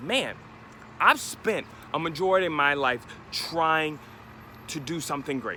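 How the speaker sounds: ordinary talk, nothing marked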